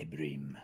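dangerous-sounding tone. Repeating a word the other speaker just offered: sounding dangerous. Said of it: "Why does it sound like it was dangerous".

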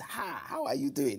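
put-on Nigerian accent. Speaker shows how they spoke at school in 1979 east london, in a strong nigerian accent. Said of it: "I spoke like this".

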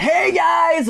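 very high, strange-sounding, odd tone. A host greeting viewers at the start of the livestream, weird voice tonality. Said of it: "that's a weird tonality in my voice".

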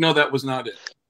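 deadpan, flat, matter-of-fact plain delivery. Retelling how they answered an insult, acting out a matter-of-fact reply. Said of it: "I answered it like matter of factly, like".

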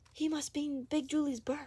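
whispering. Susan leans close to the narrator's ear, whispered. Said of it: "whispered Susan".

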